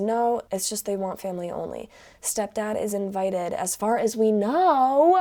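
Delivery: ordinary talk, nothing marked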